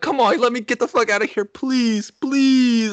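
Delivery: mock near-tears, very high-pitched, tearful voice. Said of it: "starting to tear up".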